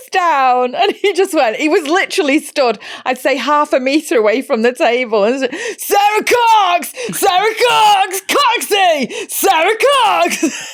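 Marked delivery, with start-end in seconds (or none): 5.8-10.7 mock very high, slow, drawn-out shouting. Retelling how a passerby at the restaurant table kept calling a name: imitating a man shouting. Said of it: "shouting over our food and conversation".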